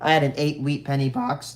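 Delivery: voice breaking, cracking mid-sentence. Telling viewers about a bad box pull, voice cracking. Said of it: "that was a horrible voice crack".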